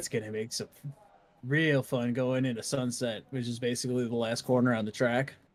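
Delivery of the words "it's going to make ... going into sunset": very sarcastic, heavy ironic stress on "fun". Describing sun glare on the track at sunset: sarcastic tone. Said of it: "very sarcastically".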